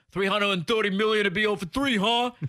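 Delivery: put-on New York accent yell. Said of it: "in kind of a New York accent yells at him".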